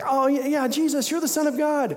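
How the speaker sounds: put-on eager excitement. Retelling how someone in the crowd yelled to Jesus: imitating excited crowd. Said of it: "and they're all excited".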